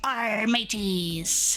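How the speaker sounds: put-on pirate voice. Announcing that it's International Talk Like a Pirate Day: talking like a pirate. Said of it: "it's International Talk Like a Pirate Day".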